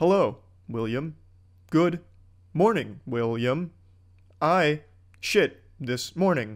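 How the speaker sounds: robotic, dead level, stopping on each word. Speaker mocking an actress's movie performance, imitating robotic line delivery. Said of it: "She sounds like a robot throughout the entire movie".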